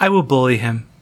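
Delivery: ordinary delivery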